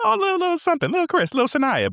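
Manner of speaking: very high, patronizing, swooping falsetto. Speaker recalls how people addressed them, performing it in a high falsetto. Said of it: "you hear the falsetto of my voice go up".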